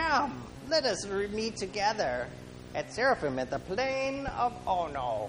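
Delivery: slow, high, sinister evil villain voice. Quoting a message sent to the speaker, delivered in an evil voice. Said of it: "let me use the evil voice".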